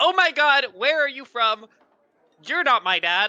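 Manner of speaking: wildly excited, very high-pitched and very loud. Playing a character meeting another gnome: very excited. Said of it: "Very excitedly in gnomish".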